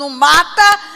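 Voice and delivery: very loud shouting. Retelling the mother's reply in the scene: imitating a mother shouting. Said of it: "a mãe gritando".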